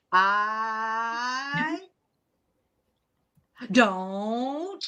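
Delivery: very, very slow, drawn-out speech. Joking about stretching paid per-minute talk, the speaker demonstrates talking really, really slow. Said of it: "I talk really, really, really slow".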